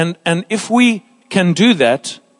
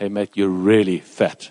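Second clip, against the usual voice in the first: kind, gentle, soft, very low voice; 10 semitones lower, 5 dB quieter than usual. Quoting a man telling him he is fat, retelling a gentle remark. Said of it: "He said it gently".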